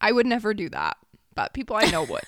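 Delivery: words broken up by laughter, swooping pitch. Teasing people you know over an inside story, laughing while talking. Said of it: "I can't stop laughing".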